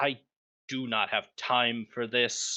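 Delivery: grumbled aside, as if to oneself. A game master voicing a lizard-eyed figure facing the party, muttering to himself. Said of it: "he mutters to himself".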